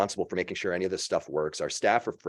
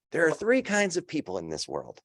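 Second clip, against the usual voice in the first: put-on high, nasally kid voice with swooping pitch; 9 semitones higher than usual. Retelling a kid's speech at a class election, in a nasally voice. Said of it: "He had a bit of a nasally voice".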